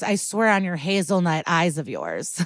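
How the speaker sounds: normal talking voice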